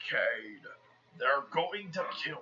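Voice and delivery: weak, feeble, very quiet, barely audible character voice. Recapping a movie scene, the speaker quotes Optimus talking to Cade in Optimus Prime voice. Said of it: "My Prime voice ain't at the best".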